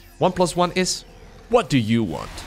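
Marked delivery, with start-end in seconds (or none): 1.5-2.3 clumsy, bad put-on strategy-game unit voice. Commentating on a game and suddenly voicing a unit, Warcraft unit impression. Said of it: "that was my worst impression so far".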